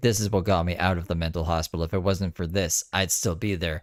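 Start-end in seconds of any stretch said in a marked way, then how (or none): none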